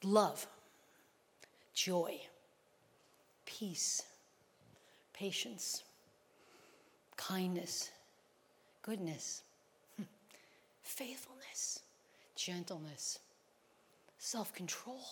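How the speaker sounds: very slow, hushed, breathy, drawn-out whisper. Speaker reading words from Galatians to listeners, said really slowly. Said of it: "I'm going to say these words really slowly".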